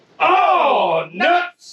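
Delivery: very high, loud yell with drawn-out oh. Showing how the team will yell when they get calls: yelling the team call. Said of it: "we're yelling".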